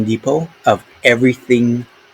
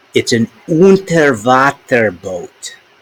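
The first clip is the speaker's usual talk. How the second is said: put-on German accent. Trying out a word to see if listeners understand, in a German accent. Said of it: "I'll try to say it with my German accent".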